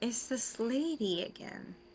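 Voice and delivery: very quiet, hushed whisper. Whispering a question to Galen in character: whispering. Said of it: "I'm gonna whisper to Galen".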